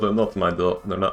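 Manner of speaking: put-on slipping accidentally into a Russian accent. Repeating another speaker's accent by accident: slipping into a Russian accent. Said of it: "I went Russian".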